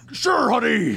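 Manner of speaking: shrill, very loud, belted cartoon cowboy voice. Quoting a mom's reply to her child's ringtone question, in a Yosemite Sam-like voice. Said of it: "That sounded like Yosemite Sam".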